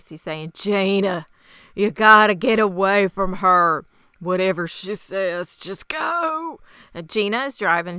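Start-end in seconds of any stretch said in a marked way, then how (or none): 0.5-6.6 very strained, effortful, slow voice. Retelling a wounded man's words to the driver of his truck; retelling a strained voice. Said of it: "he's talking in this very strained voice".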